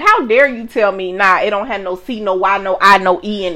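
ordinary delivery

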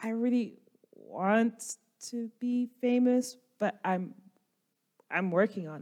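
soft, hushed, half-whispered talk. Answering a goblin who called the character famous: whispering in character. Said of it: "I kinda whisper".

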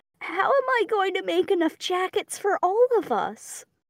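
mournful, very high-pitched, extremely sad voice. A player's character turns to everyone with a question, saddest voice ever. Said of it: "say in just the saddest voice ever".

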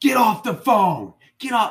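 high-pitched screaming. Retelling Dad overhearing a phone fight with a friend, imitating Dad screaming. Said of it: "he starts screaming at me".

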